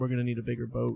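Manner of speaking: low, flat-faced, dead-straight deadpan delivery. Recounting how he gets off the ship and looks at you, retelling a deadpan line. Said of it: "he looks at you deadpan".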